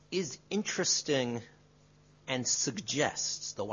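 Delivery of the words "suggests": suggests stressed, drawn out slowly. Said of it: "I underline the word suggests".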